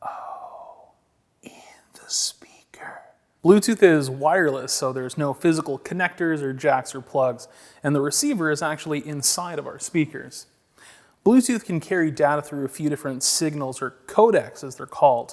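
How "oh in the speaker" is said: slow, breathy whisper, half to oneself. Interjecting during an explanation of speaker inputs, whispering.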